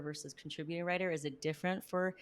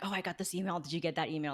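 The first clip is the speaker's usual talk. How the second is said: put-on whisper. Acting out writers gossiping about a pitch email: imitating someone whispering. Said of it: "all whispering".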